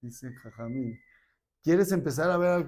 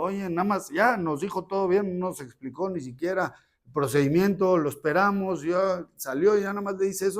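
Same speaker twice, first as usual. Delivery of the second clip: furious, boiling-mad, pitched-up voice; 5 semitones higher than usual. Retelling a father complaining after the doctor walks off: imitating a furious father. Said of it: "el papá estaba hirviendo".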